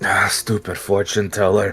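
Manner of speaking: grumbled aside, muttered to nobody in particular. Player voicing their character as he looks over at Isolde: muttered under breath. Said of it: "under his breath he goes".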